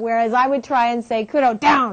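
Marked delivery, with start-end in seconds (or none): 1.3-1.9 sternest, firm, commanding voice. Recalling trying to command Kudo, who ignored you, acting out a stern command. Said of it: "even in the sternest voice".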